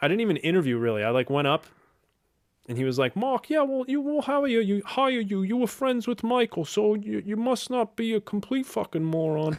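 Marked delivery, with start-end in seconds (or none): 3.2-9.6 put-on drawling Brooklyn accent, very high. Retelling what the man who gave him the job said, slow brooklyn accent. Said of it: "he talked kind of slow with this Brooklyn accent".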